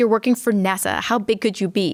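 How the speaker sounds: ordinary talk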